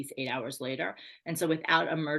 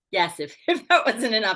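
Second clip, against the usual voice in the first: very loud, high laughter through the words; 7 semitones higher, 9 dB louder than usual. Answering an interviewer's question about a tragic family event, laughing while talking. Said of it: "I'm laughing only because".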